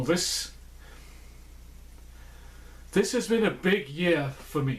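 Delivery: emotional, choked-up, halting voice stumbling on words. Looking back on a big year of Oktoberfest review videos, a bit emotional. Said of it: "I'm getting a bit emotional".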